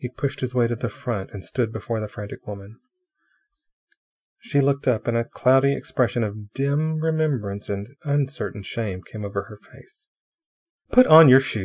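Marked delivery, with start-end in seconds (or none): 10.9-11.7 severe, stern voice, raised. A man pushes to the front and addresses a frantic woman, sternly. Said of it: "he sternly said".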